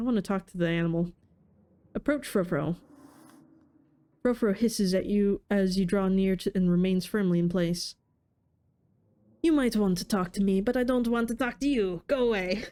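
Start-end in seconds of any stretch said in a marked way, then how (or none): 9.4-12.6 clumsy, bad put-on French accent. A game narrator voices the animal Frofro as the players approach: bad French accent. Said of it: "I don't know how to do a French accent".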